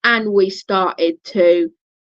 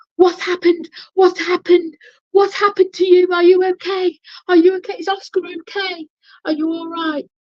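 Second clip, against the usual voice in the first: mock frantic, worried, very high-pitched voice; 10 semitones higher than usual. Retelling someone running up in a panic: imitating frantic worry. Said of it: "he was frantic with worry".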